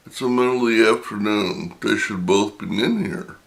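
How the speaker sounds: ordinary talk, nothing marked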